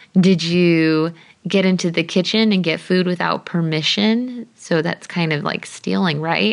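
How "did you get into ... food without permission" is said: plain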